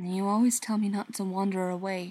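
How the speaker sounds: usual speaking voice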